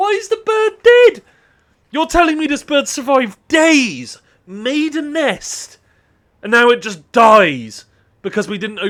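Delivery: furious, very high, loud, swooping fuming outburst. Speaker learns a bird trapped inside died trying to get out, fuming. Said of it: "I'm fuming".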